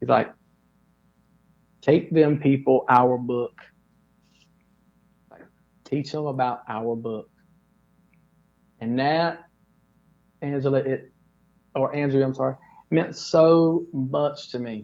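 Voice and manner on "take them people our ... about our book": dropped, close-in, deep, low-pitched earnest voice. Retelling what a security guard told him up close: imitating someone speaking very low. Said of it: "he says it's super low".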